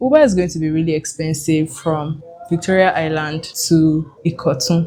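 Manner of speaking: ordinary talk, nothing marked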